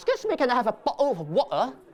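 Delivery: put-on London accent, shop-counter style. Teaching visitors how Londoners order water, in a London accent. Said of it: "In London, make sure you say".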